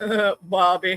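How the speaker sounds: put-on Texan-accented cartoon dad voice. Showing how friends said they sounded: King of the Hill voice. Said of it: "say that I sounded like King of the Hill".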